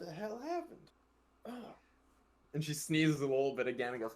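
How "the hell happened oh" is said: gentle, soft, high put-on Southern accent. Recalling how mom sounded, the speaker does a southern hospitality voice. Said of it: "Southern hospitality voice".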